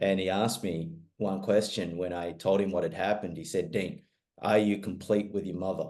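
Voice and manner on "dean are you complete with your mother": big coach's very deep voice. Speaker retells his coach asking him a question, in a very deep voice. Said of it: "speaks in a very deep voice like this".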